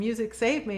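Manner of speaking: ordinary talk, nothing marked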